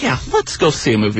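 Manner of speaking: ordinary talk, nothing marked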